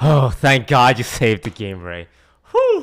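loud, swooping, overacted put-on relief. Reacting to Ray saving the game: overacted fake relief. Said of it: "sounded like you were acting a little bit".

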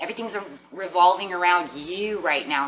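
ordinary talk, nothing marked

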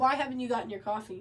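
ordinary talk

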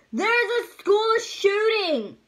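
sudden, loud, high-pitched yell. Recounting how someone under a table lifted the tablecloth, retelling a yell. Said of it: "he yells".

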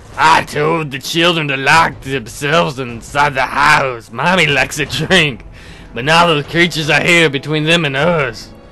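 loud, rough, gruff woman's voice. Voicing a mother character, the narrator tries again with a gruffer woman's voice. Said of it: "I have to give her a gruffer voice".

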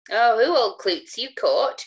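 slow, mocking, scornful jeering taunt. In a read story, a man taunts the storyteller, jeering. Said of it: "cried he jeeringly".

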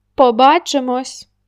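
calling out. Marko calls after the narrator as he leaves, shouted after someone. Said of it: "крикнув мені навздогін".

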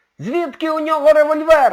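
very high, very loud, frightened yell. Colin runs out of the room after the professor fires, a frightened shout. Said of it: "налякано прокричав Колін".

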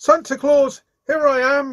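loud, very high crying out. Jimmy Scarecrow calling to Santa Claus, who does not hear him, crying out. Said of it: "he cried out".

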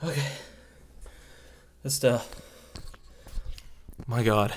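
out of breath. Speaker stopping to catch their breath, out of breath. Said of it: "so out of breath".

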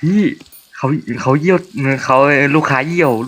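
put-on whispered voice. Retelling what someone said to the deputy manager at the counter, imitating a whisper. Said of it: "เขาแบบมากระซิบตรงเคาน์เตอร์อะ".

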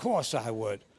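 put-on Cockney accent. Telling a joke and repeating one character's reply, in a put-on Cockney accent. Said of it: "Should I put on a Cockney accent?".

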